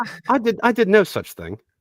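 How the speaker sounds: fake proper English accent, very high and very loud. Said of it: "like if you were going to go and have tea with the Queen".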